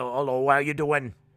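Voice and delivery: thick Norfolk accent, possibly put-on. Answering which British accent is hardest to understand, demonstrate a real thick Norfolk accent. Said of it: "like a kind of a real thick, like, Norfolk type accent".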